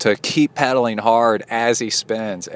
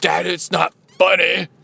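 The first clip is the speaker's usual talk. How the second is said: put-on angry voice, higher pitch; 8 semitones higher than usual. Retelling how Kai answered while mad: imitating an angry Kai. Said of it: "And Kai was mad".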